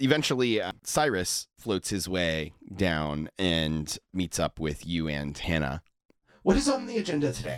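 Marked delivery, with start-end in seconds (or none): 6.4-7.6 little chipper voice, much higher and faster. Narrator voices Cyrus meeting up with the party: Cyrus's chipper voice. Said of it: "In kind of like a little chipper voice".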